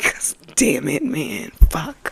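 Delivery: emotional, hushed, breathy, catching, choked-up outburst. Talking about people dying and asking listeners for a moment, getting a little emotional. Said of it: "I'm getting a little emotional right now".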